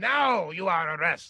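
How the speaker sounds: put-on booming, very loud, thick heavy Polish accent. Retelling what a wrestler said after popping the speaker's elbow, in a thick Polish accent. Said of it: "with his big, thick Polish accent".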